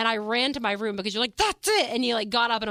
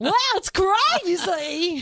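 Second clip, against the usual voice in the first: higher, happy, unhinged crazy-lady voice; 8 semitones higher, 4 dB louder than usual. Showing how the crazy lady voice differs: happy crazy lady voice. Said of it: "the crazy lady voice is like".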